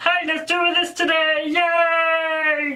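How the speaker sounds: classic cheery puppet voice, yay drawn out. Describing the different puppet personalities, doing Frank's Muppety puppet voice. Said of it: "very muffetly, very a common puppet personality".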